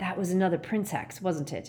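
ordinary delivery

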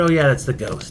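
ordinary talk

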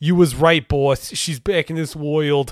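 dopey, dumb-sounding put-on New Jersey accent. Retelling a line by a really dumb blonde-haired boy character: dumb Jersey boy accent. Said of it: "talks like he's a fucking Jersey boy".

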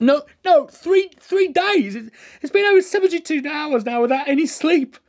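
growing anxious, pitch climbing. A sleepless patient answers a doctor reading notes, voice rising, anxious. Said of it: "my voice getting higher as I got more anxious".

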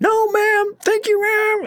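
acted, piercing, very high-pitched shout. Telling a story about a kid in a food line, the speaker imitates his yelling. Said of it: "keeps yelling like louder and louder".

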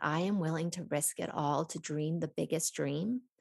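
ordinary delivery

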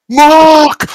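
loud, high-pitched shouting. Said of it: "The rest were shouting".

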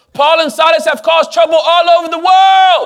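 mock crowd shouting. Reading an angry crowd's accusation from scripture: imitating a crowd shouting. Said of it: "That's why I'm shouting".

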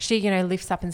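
ordinary delivery

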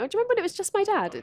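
very high, giggling, laughing speech. Recounting what an interviewee said while being interviewed, imitating her laughing while talking. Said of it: "she's like laughing".

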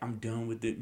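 ordinary talk, nothing marked

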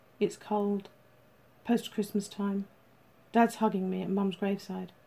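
plain reading voice

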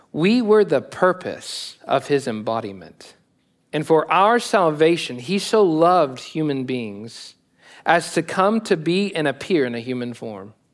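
reading as slowly as possible, very deliberate. Reading a passage from On the Incarnation aloud to listeners, very slow reading. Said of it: "I'm going to try to read it as slowly as possible".

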